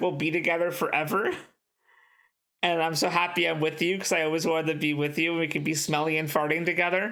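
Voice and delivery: ordinary talk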